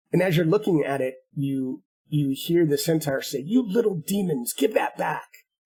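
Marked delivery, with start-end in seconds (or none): 3.4-5.2 annoyed, irritated, scolding tone. A narrator voicing a centaur speaking to a boy and a girl, irritated. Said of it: "in what is clearly significant irritation".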